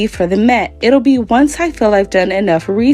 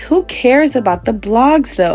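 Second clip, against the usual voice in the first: plain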